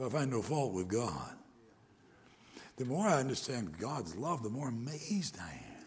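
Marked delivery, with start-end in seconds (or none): 0.0-1.4 put-on aged, gravelly voice. Retelling a conference speaker's words about his child's death: Doctor Seitler's old gravelly voice. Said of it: "in that old gravelly voice".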